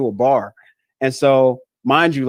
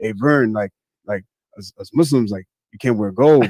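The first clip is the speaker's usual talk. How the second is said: chummy, casual bro-style buddy voice; 4 semitones lower than usual. Retelling a friend's warning about gold: imitating Brother Hamza. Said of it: "why do you talk like that?".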